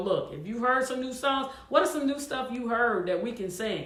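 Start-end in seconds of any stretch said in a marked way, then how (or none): none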